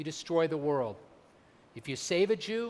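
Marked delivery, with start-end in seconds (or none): none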